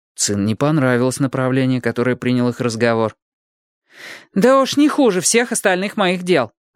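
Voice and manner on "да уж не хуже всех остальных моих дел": curt, snapping, sharp tone. Qing answers someone who says she did wrong; snapped back. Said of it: "огрызнулась она".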